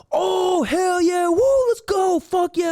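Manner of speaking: pumped-up whooping, very high and drawn out. Imitating someone getting hyped for a play: imitating someone getting hyped. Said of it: "getting hyped for a play".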